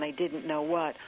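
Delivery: ordinary talk, nothing marked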